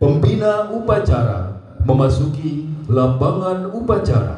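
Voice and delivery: slow, solemn, drawn-out, formal delivery.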